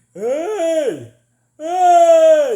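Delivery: very high, loud, open "hey" stretched long. Showing how to reach mixed voice from chest: Patrick Star noise. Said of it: "a Patrick Star noise".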